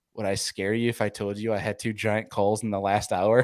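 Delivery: acted-out, close, leaned-in whisper. Retelling what another nominee leaned over and said at the awards, retelling a whisper. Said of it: "leans over and whispers to me".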